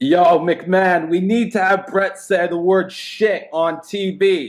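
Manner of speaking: put-on heavy Brooklyn accent, spoken slowly. Imagining a wrestling writer pitching an idea: Vince Russo impression with Brooklyn accent. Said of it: "Impression's really good".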